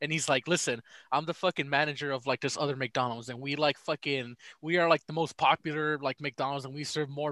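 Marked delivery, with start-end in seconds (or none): none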